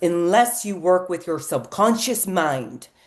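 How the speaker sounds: bad, put-on Israeli accent. Retell what the woman told you in the session, in a bad Israeli accent. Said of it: "I can't do an Israeli voice very well".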